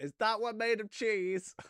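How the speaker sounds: called out loudly at a high pitch. Predicting what someone will say to the vampire downstairs, acting out a shout. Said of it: "He's going to shout".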